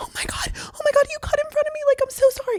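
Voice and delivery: play-acted, very high, frightened, scared pleading voice. Retelling answering an angry driver at the car window: retelling own scared apology. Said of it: "literally shaking in the car".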